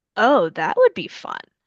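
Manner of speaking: usual speaking voice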